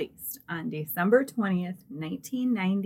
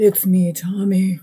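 distorted creepy voice, louder; 9 dB louder than usual. Greeting listeners as a joke, creepy voice-changer voice. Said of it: "the little voice changer".

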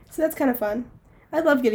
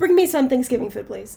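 usual speaking voice

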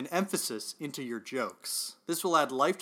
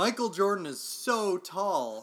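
slow, drawn-out, exaggerated sarcasm. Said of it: "I'm being sarcastic".

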